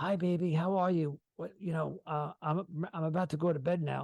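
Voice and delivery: hushed, half-whispered voice. Speaker acting out how she half-whispered into the phone on FaceTime, imitating her half-whispering. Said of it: "she'd be like whispering into the phone".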